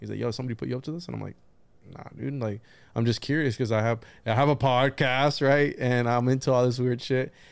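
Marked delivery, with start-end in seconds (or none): 0.2-1.1 mock very defensive tone, quieter, faster. Recounting asking a man about Bigfoot, retelling his super defensive reply. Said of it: "he got super defensive".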